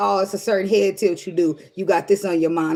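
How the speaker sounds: ordinary talk, nothing marked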